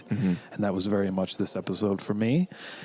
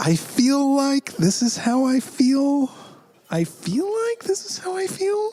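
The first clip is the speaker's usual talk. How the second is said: questioning lilt, every line rising; 4 dB louder than usual. Answering whether this is how they feel, in mock upspeak. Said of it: "Are we going into Upspeak".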